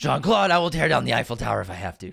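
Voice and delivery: deep voice with a rough, rasping edge. Repeating the Taken line for the other player: Liam Neeson impression. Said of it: "I'm Liam Neeson".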